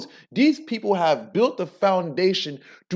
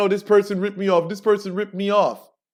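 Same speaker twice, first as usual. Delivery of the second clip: put-on crying voice. Imitating people who come crying about being ripped off: imitating someone crying. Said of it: "You crying and saying".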